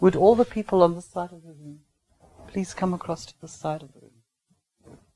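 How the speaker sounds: polite, courteous, nice tone. Contrasting a pointed order with the same words as a request, requesting, not pointing. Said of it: "now I'm requesting, I'm not pointing, I'm requesting".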